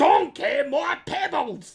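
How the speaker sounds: acted cartoonish Scottish voice. Repeating the cereal line as a mix of Shrek and Fruity Pebbles. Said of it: "a mix of, like, Sh-, Shrek and the Fruity Pebbles commercials".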